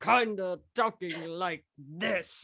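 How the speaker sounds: drawn-out low voice, playing cool. Retelling recording the line where Elliot tries to be cool: Elliot trying to sound cool. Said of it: "he talks something like that".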